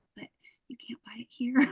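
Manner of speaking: whisper under the breath. Telling how she shows people a mascara saved on her phone, whispering. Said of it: "I'm like whispering".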